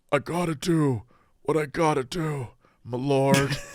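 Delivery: laid-back beach dude voice. Imitating Keanu Reeves's line in Bram Stoker's Dracula: Keanu Reeves impression. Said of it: "sounds like he lives at the beach".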